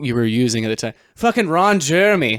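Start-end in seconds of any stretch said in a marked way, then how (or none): 1.2-2.4 high, put-on Boston accent. Podcast speaker recalls how Zach pronounced a name: imitating Zach's Boston accent. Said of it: "It might have been a Boston accent".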